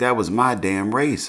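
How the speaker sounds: usual speaking voice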